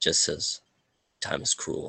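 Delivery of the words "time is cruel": flat, dry, deadpan, breathy near-whisper. Voicing a character who looks another dead in the eyes: deadpan. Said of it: "just as deadpanned".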